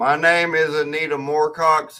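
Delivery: loud, slow, drawn-out southern cowboy accent. Introducing oneself to the chat: sounds like a cowboy. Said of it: "sounds like a cowboy".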